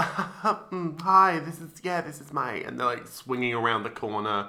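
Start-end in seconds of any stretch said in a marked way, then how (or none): 0.0-2.5 very drawn-out, slow rich tour-host voice. Mocking billionaires in YouTube videos showing their houses: imitating a billionaire giving a house tour. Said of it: "they're always going like".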